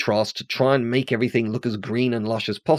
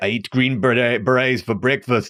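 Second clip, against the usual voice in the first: terrible, bad put-on Austrian accent. Quoting Arnold Schwarzenegger's reply to a Green Beret in Commando, terrible Arnold Schwarzenegger accent. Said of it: "my a terrible attempt at doing an Arnold Schwarzenegger accent".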